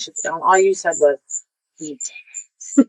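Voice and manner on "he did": strange, weird, spooky, eerie whispered voice. Recounting what the listener said back then, the speaker repeats it in an eerie whisper. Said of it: "I kind of whispered it like in this weird, eerie voice".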